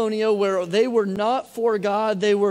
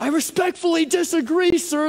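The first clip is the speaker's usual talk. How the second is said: acted-out high-pitched yelled voice; 7 semitones higher than usual. Retelling a line yelled at referees: imitating own yelling at referee. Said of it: "I yell that".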